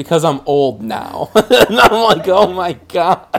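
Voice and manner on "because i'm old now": acted dry, flat, expressionless deadpan. Retelling asking why the parents watch golf, and the mom's reply: imitating mom's deadpan. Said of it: "deadpan goes".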